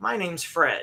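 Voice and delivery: soft tv presenter voice. Retelling how the man finally introduces himself: imitating Fred Rogers' voice. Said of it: "he goes".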